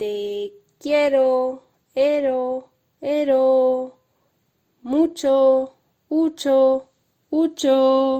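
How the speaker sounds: very loud echo on endings, "ero" drawn out. Showing a loved one different ways of saying something: saying it with an echo. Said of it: "¿Te lo digo con eco?".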